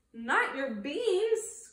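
indignant, outraged outburst, crying out. Narrator reading Skipito's reply to Poquito Tito, crying out, outraged. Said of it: "cried Skipito, outraged".

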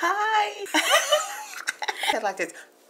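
excited, high, loud, giggly squeal with a laugh.

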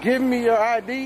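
ordinary talk, nothing marked

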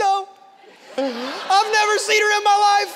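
put-on very high, loud sobbing child voice. Retelling Paisley's answer when he got in her face, imitating Paisley crying. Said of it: "And Paisley's crying. She's like".

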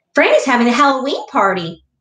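upbeat, cheerful sing-song voice. Drew speaks up at the table after Mom says she's tired, in a cheer-you-up voice. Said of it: "says Drew in a cheer-you-up voice".

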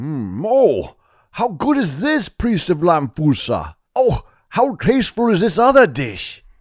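very high voice, savouring and relishing, delighted. The king praises the dishes to the priest of Lamfusa while eating, delighted. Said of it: "the king ate with delight".

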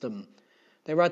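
plain reading voice

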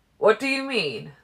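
very loud, insistent, demanding tone. A narrator reads a story line where one character demands something of another: demanding. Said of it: "Emmett demanded".

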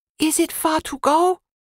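trembling, shaky, very high-pitched voice. Narrator reads Britt asking him a question, in a shaky voice. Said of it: "Britt asked him in a shaky voice".

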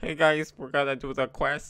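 put-on nerdy voice. Repeating a line from an old recording: mocking own nerdy younger self. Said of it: "I was such a nerd".

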